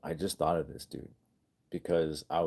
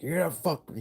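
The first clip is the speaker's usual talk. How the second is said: very high-pitched, menacing, threatening yell; 11 semitones higher than usual. Retelling how one person terrorized another: imitating someone yelling. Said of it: "He was yelling at him".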